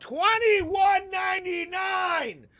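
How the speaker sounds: exasperated, disgusted loud shouting, rising and swooping. Complaining to friends about an xbox game pass price rise: yelling. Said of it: "I had to yell that".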